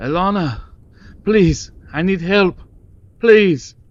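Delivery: shrill, very high, loud, desperate pleading voice. Voicing a former fiancé calling from the forest: Garvin pleading for help. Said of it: "Garvin's voice".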